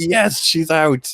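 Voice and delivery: high, slow, drawn-out gleeful relief. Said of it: "I was just like".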